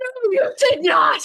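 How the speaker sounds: high, loud, shrieking, stretched-out screaming. Retelling a son's reaction in the car: imitating son screaming. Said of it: "He was screaming at me".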